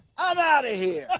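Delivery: acted, fake angry yelling. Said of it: "And then you yell".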